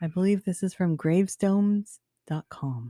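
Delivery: spooky, eerie whisper. Introducing what they will read aloud, the speaker talks in a spooky whisper. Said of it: "Why are you whispering?".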